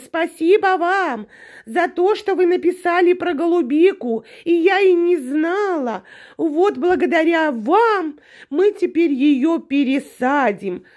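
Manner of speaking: small, thin, high, bleating put-on voice. Mimicking her thanking viewers in her last video: thin bleating little voice. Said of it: "блеяла прям таким голосочком".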